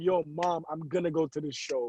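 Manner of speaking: begging, pleading voice. Retelling asking a mother to go to a concert: imitating own past begging. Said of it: "I remember begging my".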